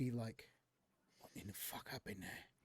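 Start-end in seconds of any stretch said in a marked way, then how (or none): 1.2-2.4 very quiet mutter under the breath. The game master voices Jarrus, who has tucked the listener away, muttering under breath. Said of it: "under his breath".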